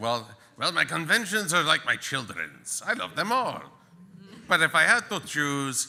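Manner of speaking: put-on vampire count voice. Answering the question of a favorite convention, in a Dracula voice. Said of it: "You sound like Dracula".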